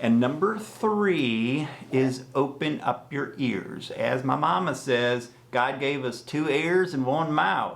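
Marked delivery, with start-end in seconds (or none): 5.5-7.8 slight put-on, light southern American accent. Quoting a saying of the speaker's mama, little southern accent. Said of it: "I always like to put that little southern accent in there".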